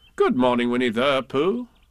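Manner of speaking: plain reading voice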